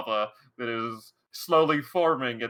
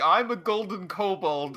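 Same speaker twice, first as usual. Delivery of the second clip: slow, wild, drawn-out scream; 7 semitones higher than usual. Player teasing a teammate whose kobold runs around stealing things: mock screaming. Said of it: "You're just running around screaming".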